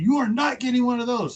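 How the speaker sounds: very high outburst just short of a scream. Retelling his wife's reaction at Home Depot: imitating wife almost screaming. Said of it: "she's almost screaming".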